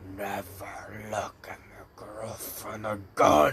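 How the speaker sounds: sinister, dark, demon-like voice. Telling a story and voicing a character's line, in a dark, demonic voice. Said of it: "In a dark, demonic voice".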